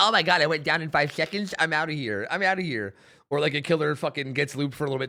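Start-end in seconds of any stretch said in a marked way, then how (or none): 0.0-2.9 contemptuous, scornful tone. Mocking survivors who quit after going down fast: imitating a quitting player. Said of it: "It's usually like".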